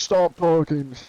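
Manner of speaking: high-pitched, shouted yell. Retelling a game encounter where a stranger yelled at a kid: imitating someone yelling. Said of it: "yelling at one of them".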